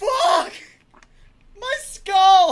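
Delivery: very loud, very high shriek of pain. Telling about cracking their head against the back of the boat, retelling a pained scream. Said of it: "and I'm screaming".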